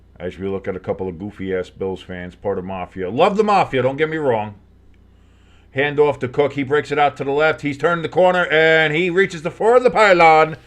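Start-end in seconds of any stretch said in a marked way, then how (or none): 8.5-10.5 fake Italian accent, slowed right down, drawn out. Calling a run toward the pylon, slipping into a put-on italian accent. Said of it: "I don't know why I turned Italian there".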